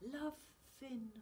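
soft, hushed half-whisper, barely there. A woman speaks to the narrator, half-whispering. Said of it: "she whispered".

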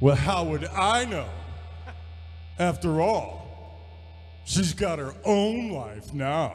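put-on sarcastic tone. Speaker retells how a man answered when asked about her, imitating a sarcastic reply. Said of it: "he would give you this sarcastic".

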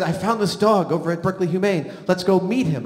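usual speaking voice

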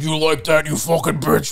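horror villain voice. Describing a man still raw from a breakup, putting on his Saw voice. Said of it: "he's putting on his Saw voice".

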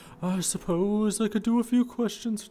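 very high, slow, put-on elderly voice. Voicing a villager asked some questions: old voice. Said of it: "I should do an old voice".

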